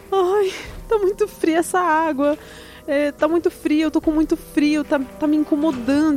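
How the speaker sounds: put-on crying while talking. Telling how he got into the cold water, act out someone crying while talking. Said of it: "Falar e a chorar".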